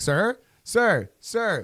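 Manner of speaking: acted-out, high, calling yell in a woman's voice. Retelling a lady calling after him as he walked out with dog food; imitating a woman yelling. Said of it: "Why is that lady yelling at you?".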